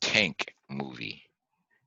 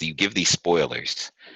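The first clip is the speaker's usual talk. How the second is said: ordinary delivery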